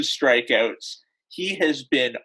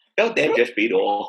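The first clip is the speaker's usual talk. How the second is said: put-on old baseball broadcaster voice, lower; 3 semitones lower than usual. Opening a baseball talk segment as Vin Scully: Vin Scully impression. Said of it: "You have a phenomenal Vin Scully impression".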